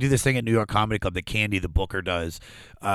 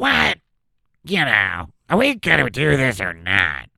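brash, pushy, loud, swooping Missouri woman's voice; 3 semitones higher, 5 dB louder than usual. Showing someone who asks what she really sounded like, in Blondie's Missouri voice. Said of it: "She was just Missouri".

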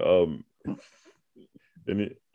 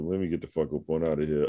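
ordinary talk

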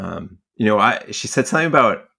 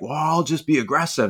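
put-on aggressive, angry outburst; 6 semitones higher than usual. Retelling a woman's reaction to a passive-aggressive remark, mock-angry retelling. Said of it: "that sent her off".

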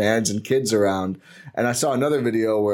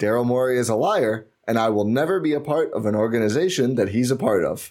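plain

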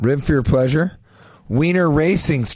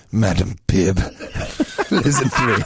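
low, smooth and proper put-on English accent; 5 semitones lower than usual. Playing Dr. Pepper, speaking to Madam Pibb, in an English accent. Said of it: "Why is he have an English accent now?".

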